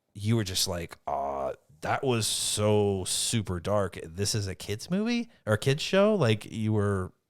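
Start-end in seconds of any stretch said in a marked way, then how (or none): none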